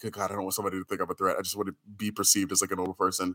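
soft, fast, worried inner voice. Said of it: "I'm just like".

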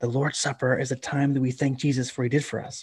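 soft, tender, hushed stage whisper. Retelling how a young sister explained something to her toddler brother: imitating a gentle half-whisper. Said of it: "whispers gently".

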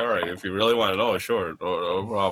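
low, fast resigned mutter.

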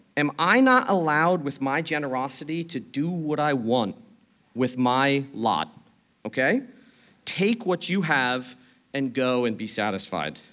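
ordinary delivery

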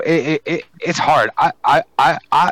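slow, halting, stumbling stutter with repetitions. Giving an opinion on a match when asked, stuttering. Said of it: "wow, I'm stuttering today".

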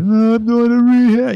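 very high weepy crying voice. Retelling the drive to rehab, imitating own past crying.

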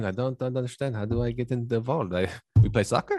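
imitated Mexican accent. Acting out what the mexican guys would chime in with, in a put-on mexican accent. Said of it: "the Mexican guys chime in".

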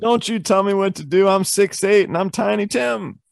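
thin, shrill, high-pitched voice. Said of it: "That shrill".

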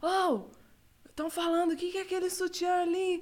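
called-out voice. Retelling how someone yelled up from downstairs during her livestream, retelling a shout from downstairs. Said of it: "o Gabriel me gritou lá de baixo".

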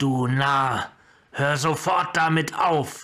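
slow delivery, hissing through every word. A narrator reads a character's retort as he whirls around: hissed. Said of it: "surak fuhr herum und zischte".

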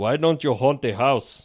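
put-on German accent. Playing a game of accent cards: Arnold Schwarzenegger German accent. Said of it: "That's Arnold German".

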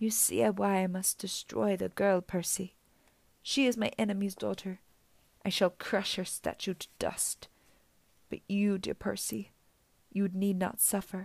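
soft, soothing, comforting purring voice. Medusa tries to turn percy against the girl: comforting purr. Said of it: "her voice modulated back to a comforting purr".

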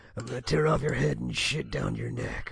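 strained, attempted low action-hero voice.

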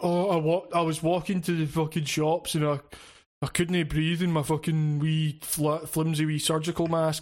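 put-on aggrieved, griping, complaining voice. Mocking people who complain about masks: imitating people complaining. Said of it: "you can't fucking have that complaint".

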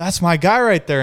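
put-on pumped cheering. Retelling a crew chief cheering on his driver, mock-excited cheering. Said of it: "like jumping up and down".

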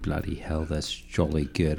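soft, put-on British accent, done as a party piece. Offering impressions to the audience, the speaker shows off a British accent. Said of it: "I can do my British".

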